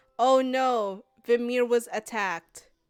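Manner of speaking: toneless, flat, deadpan monotone outcry. Retelling what someone on the other side exclaimed, in a flat monotone. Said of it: "exclaiming in monotone".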